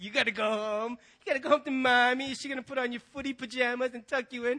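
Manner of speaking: mocking, taunting, jeering tone. Retelling what kids at a party said to the speaker, mimicking a mocking tone. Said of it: "said to me in a mocking tone".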